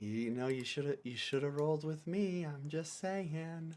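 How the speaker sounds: soft, private half-whispered aside. Playing a character who half-whispers to another character: half-whispering in character. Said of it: "I whisper to Wob Wob".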